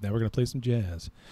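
smooth, late-night FM radio DJ patter. Told he has a good FM DJ voice, showing it off: smooth FM DJ voice. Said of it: "I get very smooth".

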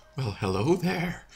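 creepy put-on voice. A co-host greets listeners at the start of the show in a really creepy voice. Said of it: "Thefier's already doing a really creepy voice".

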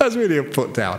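amused, laugh-filled, laughing through the words. A speaker recounting a funny anecdote to an audience, laughing.

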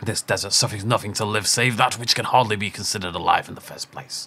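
grand, theatrical, big dramatic line reading. Speaker starting a shooter game intones a line in a dramatic voice. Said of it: "That's my dramatic voice".

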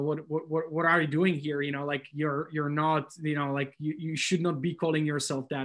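ordinary talk

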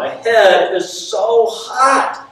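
shrill, very high, rising screaming cry. Retelling what a woman yelled to everybody, imitating a woman screaming. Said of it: "she's screaming now".

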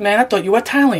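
normal talking voice

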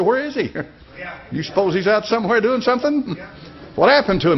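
play-acted, scornful, jeering mocking taunt. Retelling a Bible story, a speaker quotes Elijah taunting the crowd, mocking like Elijah. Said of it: "he mocked them".

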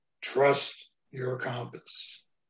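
deep wise mentor voice. Performing the piece, voicing the mentor Strider: Strider's voice, big bass mentor. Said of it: "Strider's voice came back to me".

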